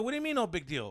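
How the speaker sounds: mock furious, enraged, angry delivery. Retelling a confrontation with another kid's dad, retelling an enraged retort. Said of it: "I'm already in a rage".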